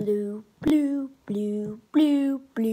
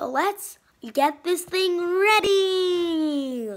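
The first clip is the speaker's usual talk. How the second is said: put-on corny, cheesy little-kid voice, drawn out; 4 semitones higher, 4 dB louder than usual. Video host introducing a Rubik's Cube solve, in a cheesy kindergartner voice. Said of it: "like that cheesy voice".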